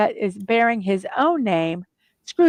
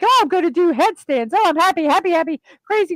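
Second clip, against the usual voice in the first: put-on giddy, pitched-up, crazy-happy voice; 7 semitones higher than usual. Retelling how Scrooge acts after his change, imitating Scrooge crazy happy. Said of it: "'cause he's like".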